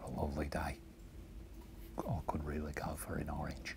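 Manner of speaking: whispered, hushed, breathy put-on Australian accent. Showing an Australian accent on a line about an orange: quiet Australian accent. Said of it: "do my Australian accent, but I'll do it real quiet".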